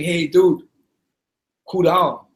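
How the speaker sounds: semi-cocky but friendly manner. Retelling telling a man to calm down: imitating semi-cocky friendly tone. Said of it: "said in a semi-cocky, kind of friendly way".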